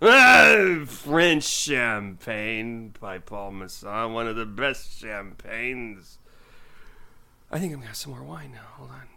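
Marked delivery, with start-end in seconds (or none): 0.0-6.2 put-on slow, slurred drawl with stretched "ah". Imitating a champagne commercial: drunk Orson Welles impression. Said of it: "look up drunk Orson Welles".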